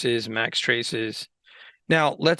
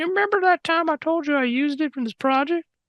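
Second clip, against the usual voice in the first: put-on eerie, creepy voice, pitched very high. Tutorial host addressing viewers during a lighting walkthrough, in a creepy voice. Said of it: "that was a creepy voice".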